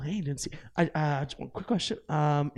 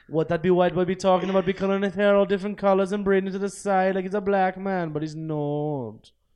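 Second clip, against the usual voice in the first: loud, bad, unconvincing put-on Jamaican accent; 4 semitones higher, 6 dB louder than usual. Commenting on a liger staring at his mane, speaker does a bad Jamaican accent. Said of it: "That didn't sound Jamaican".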